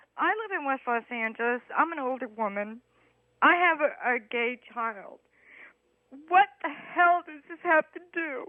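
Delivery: talking through tears, crying through the words. A caller on a radio talk show speaks to the host, crying while talking. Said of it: "Why are you crying?".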